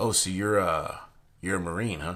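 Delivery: plain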